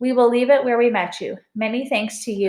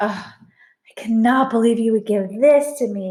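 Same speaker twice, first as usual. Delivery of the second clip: hushed, held-back delivery. Narrator reads a character who has just been handed back a map, hushed voice. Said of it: "he said in a hushed voice".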